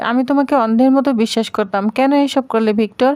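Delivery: plain reading voice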